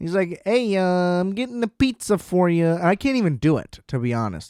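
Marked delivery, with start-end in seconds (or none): 0.4-2.7 attempted, pitched-up Chicago man's accent. Retelling a phone call from a very Chicago guy: imitating a Chicago accent. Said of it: "the most Chicago guy of all time".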